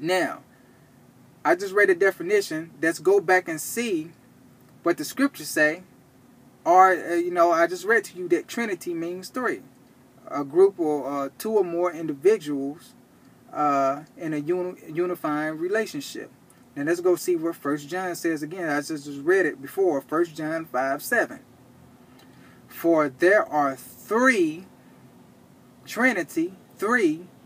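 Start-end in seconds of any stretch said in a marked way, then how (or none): 22.7-24.7 very slow, deliberately drawn-out reading. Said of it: "I have to say that slow".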